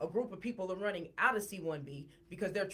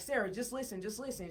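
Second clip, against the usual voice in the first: ordinary talk, nothing marked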